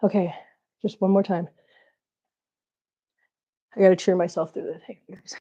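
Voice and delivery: out of breath. Cheering themselves on for one more time, out of breath. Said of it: "While I'm trying to catch my breath".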